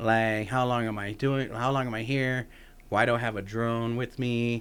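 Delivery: normal talking voice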